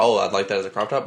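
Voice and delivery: ordinary talk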